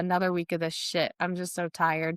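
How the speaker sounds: ordinary talk, nothing marked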